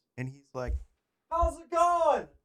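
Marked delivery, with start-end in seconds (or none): 1.3-2.2 acted-out, very high-pitched scream. Retelling how the dude outside your window greeted you, imitating a scream. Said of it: "he's screaming at me".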